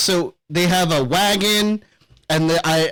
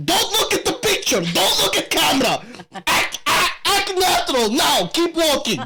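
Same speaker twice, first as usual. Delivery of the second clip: high-pitched, loud yelling; 9 semitones higher than usual. Describing a man yelling at people walking along a road, imitating someone yelling. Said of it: "he's just yelling at them".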